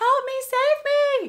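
shrill, very high, drawn-out scream. Retelling own words during labor: imitating someone yelling. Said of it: "I remember yelling and screaming".

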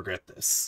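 extra deep voice. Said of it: "that's too deep".

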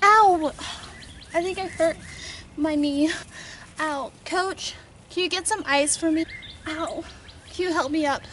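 faked, put-on hurt, pained voice. Pretending to be hurt for attention after a skill: faking being hurt. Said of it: "I'm gonna pretend that I'm gonna get hurt so I can just get attention".

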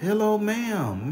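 high put-on yelling. Retelling calling out to a house after tapping its window, retelling a yell. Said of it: "I'm yelling".

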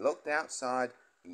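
ordinary delivery, nothing marked

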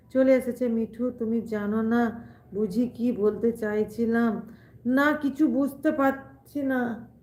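ordinary delivery

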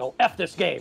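ordinary talk, nothing marked

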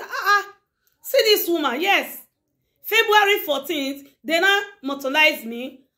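mocking, jealous scoff delivered with a laugh. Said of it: "you say".

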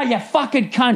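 mock angry cursing. Speaker retells muting an automated phone system to curse at it: mock-angry cursing. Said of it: "get the fucking anger out".

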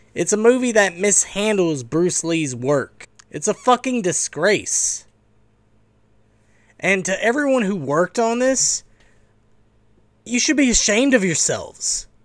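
irritated, disgusted voice. A Bruce Lee fan condemns a movie that mishandles his work: annoyed. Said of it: "I'm sorry if I sound so annoyed by this".

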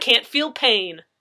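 boastful tone. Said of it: "Jason bragged".

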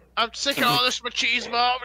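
shrill, high, loud, booming, ranting yell. Retelling how the commentator JBL yelled at a wrestler: imitating JBL yelling. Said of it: "He's just like".

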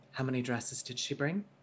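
quiet, soft delivery. Looking back at Annabelle, you turn to John and ask quietly. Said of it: "quietly say".

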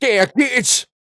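mock, very high, shrill shrieking yell. Retelling a film scene where the sheriff yells at someone: imitating Ernie shouting. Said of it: "Ernie shouting at him".

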